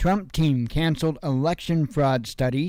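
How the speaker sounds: ordinary talk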